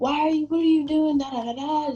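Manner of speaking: loud, high-pitched acted furious yelling. Retelling a dad yelling over the phone: imitating someone screaming angrily. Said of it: "just screaming in my ear and just so angry".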